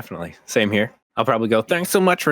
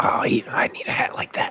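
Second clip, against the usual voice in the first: slow, hushed whisper under the breath; 4 dB quieter than usual. Voicing Tic Tic, who admires another character's hat: whispering to himself. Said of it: "gonna whisper to himself".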